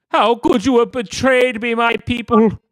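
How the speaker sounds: loud, very high, clamoring, betrayed outcry. Voicing a severed king's head crying out to his people: clamoring, betrayed outcry. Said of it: "head is still chattering and clamoring".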